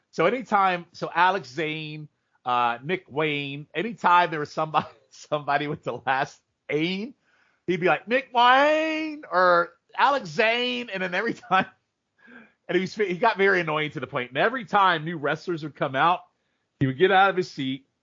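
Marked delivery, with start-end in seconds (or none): 8.0-10.9 very high, very slow, heavy Southern drawl. Retelling how a man at the wrestling show called out names, in a very southern accent. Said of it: "he had this very Southern accent".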